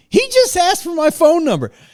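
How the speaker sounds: very high, shrill, sing-song, swooping broadcasting shout. Retelling a flight attendant telling other passengers: imitating someone yelling.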